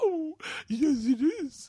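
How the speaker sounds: drawn-out, very high, slow creature voice. Imitating a wife who talks in an animal voice: imitating wife's animal voice. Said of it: "in an animal voice".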